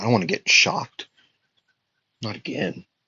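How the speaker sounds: muttered aside, whispered under the breath. Telling a made-up fight scene, voicing a character: acted muttering under her breath. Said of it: "she would say under her breath".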